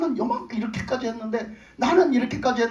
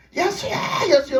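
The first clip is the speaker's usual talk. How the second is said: put-on high, loud, full-strength calling shout; 6 semitones higher, 3 dB louder than usual. Retelling how the blind man cried out to Jesus: acting out a loud shout. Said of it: "소리를 지르는 거예요".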